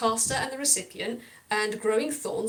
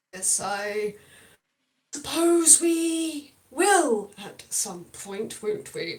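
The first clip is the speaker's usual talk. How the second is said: through gritted teeth, much slower. A beaked character, clenching the arm of his chair, answers through gritted teeth. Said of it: "He says through gritted beak".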